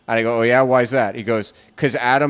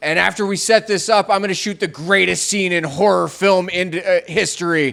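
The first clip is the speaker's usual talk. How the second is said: called out loudly, pitched up; 6 semitones higher than usual. Retelling what a man yelled out after being talked back onto set, retelling a yell. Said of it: "he yells out".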